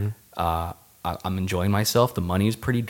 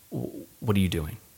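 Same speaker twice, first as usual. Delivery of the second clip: matter-of-fact delivery, quieter; 4 dB quieter than usual. Retelling a phone call where the mother asks a question: imitating someone speaking matter-of-factly. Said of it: "really matter of fact".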